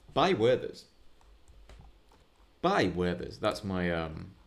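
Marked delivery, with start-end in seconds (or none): 0.1-3.4 commercial advert announcer voiceover read. The speaker demonstrates the voiceover they use for their job: advert voiceover voice. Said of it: "the voiceover I use for my job".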